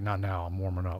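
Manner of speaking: deep voice, dropped low. Retelling a basketball star refusing an autograph: imitating Scottie Pippen's deep voice. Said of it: "in his deep voice".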